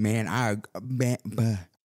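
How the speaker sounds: Southern US hillbilly accent.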